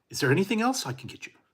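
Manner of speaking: sugary-polite automated voice. Retelling an order to a drive-through AI: imitating an overly nice automated system. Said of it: "they drive you crazy because they're so nice".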